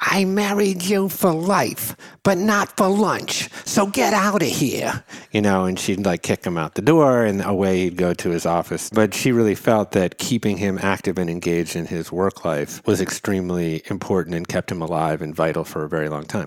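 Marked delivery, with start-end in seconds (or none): 0.0-5.0 put-on very high grandmother voice. Quoting the grandmother's saying to the grandfather: imitating grandmother's voice. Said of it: "in her inimitable voice".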